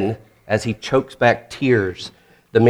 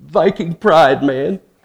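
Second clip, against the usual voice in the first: acted, higher, quivering voice broken up with emotion; 6 semitones higher than usual. Retelling a TV commercial's father line: imitating an emotional quivering voice. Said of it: "with a quivering lip says".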